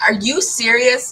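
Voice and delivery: loud outburst shouted full-voice. Reacting as an incoming guest is announced, yelling. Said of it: "Sorry, I didn't mean to yell".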